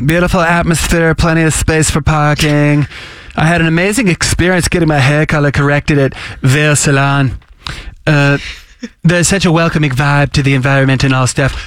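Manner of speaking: put-on cartoon kid voice blended with girl voice. Reading an online salon review aloud, in a half Cartman, half barista girl voice. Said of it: "Pardon my half Cartman, half barista girl voice".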